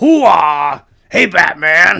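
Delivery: brash, very loud, high-pitched showman's holler. Doing the Joker as Al Pacino: Al Pacino as the Joker. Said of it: "this Al Pacino is the Joker".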